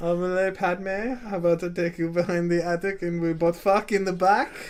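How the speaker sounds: put-on French-accented delivery. Asked to redo the line, this time with a French accent. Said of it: "this time with a French accent".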